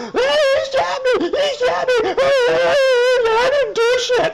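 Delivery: shrill, very high, very slow, drawn-out whiny voice. Mocking a man who complained after being shot: imitating someone whining. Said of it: "this guy whining and complaining".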